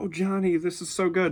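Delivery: high, gushing, doting, proud voice. Retelling a mom flipping through her son's comic: imitating a doting proud mom. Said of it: "she sounded like a mom that was gonna".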